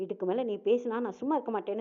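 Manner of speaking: normal talking voice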